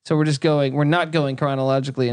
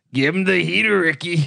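barking, movie-style sports manager voice; 4 semitones higher than usual. Doing an impression of the manager from Major League: impression of the Major League manager. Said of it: "That's my impersonation".

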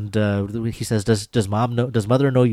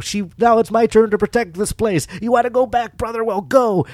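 very high-pitched, intense yelling; 12 semitones higher than usual. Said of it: "he's basically yelling at him".

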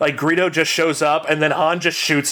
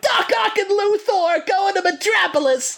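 bad, terrible put-on Brooklyn accent, very high. Actor retells his line to Spider-Man while hung from a building, in a terrible Brooklyn accent. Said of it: "I have this terrible Brooklyn accent".

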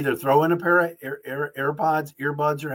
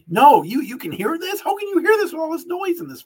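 piercing, shrill, high-pitched angry yelling; 14 semitones higher, 4 dB louder than usual. Retelling a plane passenger's reply when asked about headphones, imitating a man screaming. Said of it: "He's like screaming at me".

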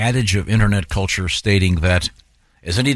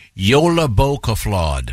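Icelandic-accented pronunciation. Reviewing odd new words, the speaker says one in an Icelandic accent. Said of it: "What accent are you doing there".

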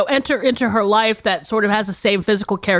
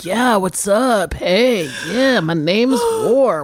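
mock smooth flirty stud voice.

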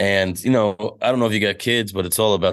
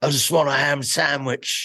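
put-on English accent, pitched up; 7 semitones higher than usual. Retelling how they got by at first with a put-on accent: fake British accent. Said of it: "a fake accent".

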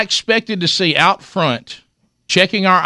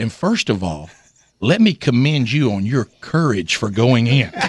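small, slight, little-sounding voice; 7 semitones lower than usual. Retelling a phone call, quoting Garnett: imitating Garnett's little voice. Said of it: "With that little voice".

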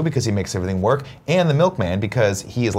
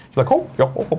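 put-on bright, high Dutch accent; 7 semitones higher than usual. Imitating the wife's grandmother from Holland: imitating a Dutch accent. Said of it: "has that accent that makes her kind of like a really cute Muppet".

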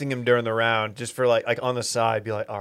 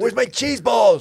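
put-on Italian tough-guy voice, higher and louder; 12 semitones higher, 7 dB louder than usual. Joking about diners at a loud Italian restaurant: Paulie Walnuts voice. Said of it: "they try to be like Paulie Walnuts".

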